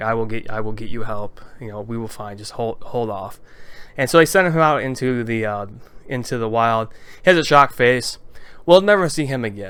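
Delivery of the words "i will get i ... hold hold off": speaking low and quietly. Retelling a manga scene, the speaker quotes a character in a low voice. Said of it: "in a in a low voice".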